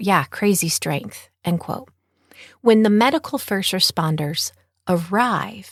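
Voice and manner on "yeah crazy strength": ordinary talk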